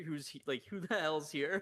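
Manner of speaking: loud, high hollering. Retelling the dad yelling when the brother was brought home: imitating dad yelling.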